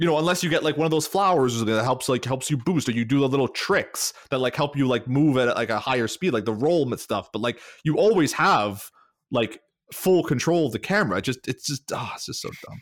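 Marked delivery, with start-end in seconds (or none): 11.2-12.8 exasperated, frustrated, breathy half-whispered mutter. Complaining about a game's run mechanic: frustrated. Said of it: "I'm getting frustrated".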